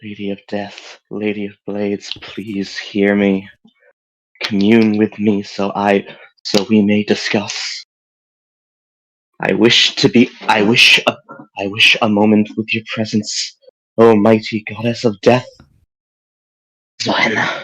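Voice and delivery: low, muttered under the breath, chant-like. Praying to a goddess while sitting in a circle: said under the breath. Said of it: "As I begin saying under my breath".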